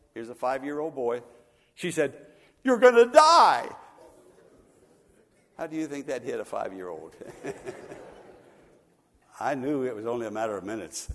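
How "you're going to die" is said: put-on loud outburst, much higher and louder. Retelling what a woman blurted to him as a five-year-old, retelling a loud outburst. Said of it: "she just blurted out in a loud voice".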